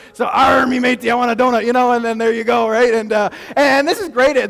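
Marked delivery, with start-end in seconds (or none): 0.3-1.7 put-on pirate voice. Showing how to ask for a free donut: talking like a pirate. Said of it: "anyone who talked like a pirate".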